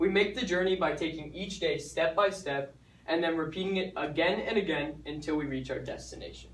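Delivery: ordinary delivery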